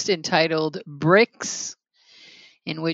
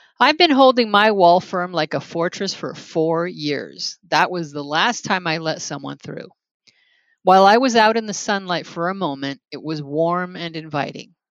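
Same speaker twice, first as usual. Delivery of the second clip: ordinary talk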